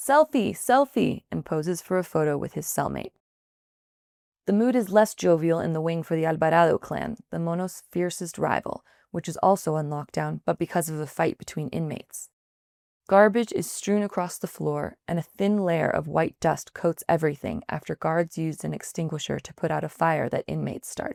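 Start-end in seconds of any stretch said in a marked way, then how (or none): 0.0-1.2 yelling, high and loud. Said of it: "One of the inmates yells".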